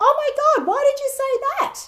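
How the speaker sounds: very high, very loud, exasperated cry. Retelling own reply to a team member: imitating own raised upset voice. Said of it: "and I said it like that".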